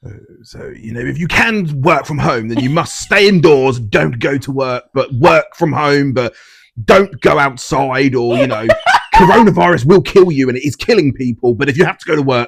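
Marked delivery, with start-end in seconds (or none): 1.0-12.5 slow, drawn-out speaking voice. Doing an impression of Boris Johnson giving lockdown rules: Boris Johnson impression. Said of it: "do your impression, 'cause you do a good one of him".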